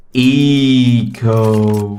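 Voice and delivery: eco drawn out very slowly, stretched. Commenting on the Chiefs' round, saying 'eco' drawn out slowly for Avant players. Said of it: "I should say it slowly for the Avant players".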